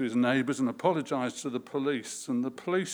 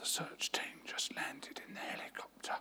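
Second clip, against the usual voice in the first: hushed, breathy whisper, barely voiced; 13 dB quieter than usual. Telling a story, the child answers the boss in a whisper. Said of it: "in a whisper".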